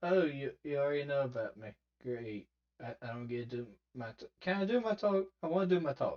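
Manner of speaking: dejected, woeful, sad and mopey voice. Imitating a character whose speech just got skipped: imitating someone sounding sad. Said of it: "He seems so sad. He's like".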